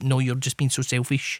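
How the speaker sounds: ordinary delivery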